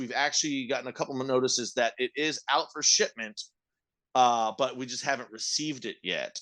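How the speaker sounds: usual speaking voice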